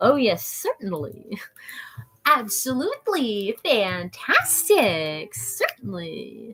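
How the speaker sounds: very slow, drawn-out, playful vocal stim. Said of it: "That's like a vocal stim".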